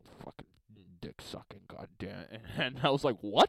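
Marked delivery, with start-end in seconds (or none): 0.2-2.2 mock muttering under breath, much quieter and lower. Retelling what one guy mumbled as rookies looked around, imitating someone muttering. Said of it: "I hear this guy mumble under his breath".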